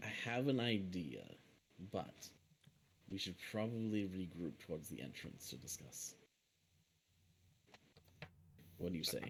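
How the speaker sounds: conspiratorial, secretive stage-whisper tone. Speaking to companions so another character won't overhear, hushed voice. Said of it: "in a hushed voice so he doesn't hear us".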